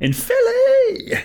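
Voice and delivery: very high, loud, slow, drawn-out excited shout. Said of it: "I just wanna go".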